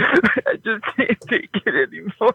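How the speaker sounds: put-on weepy voice. Demonstrating how to say a line while grieving a lost parent: fake crying voice. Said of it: "give me your best crying voice".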